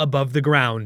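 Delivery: ordinary delivery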